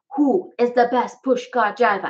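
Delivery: put-on Jamaican accent, done as a showpiece. Showing off the accents they learned, the speaker offers another: jamaican accent. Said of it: "here's my Jamaican accent".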